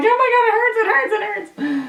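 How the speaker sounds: put-on crying, panicked. A woman recounts her panic after an injury, reenacting how she cried out at the time, imitating crying. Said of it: "and I'm freaking out".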